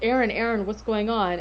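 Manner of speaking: ordinary talk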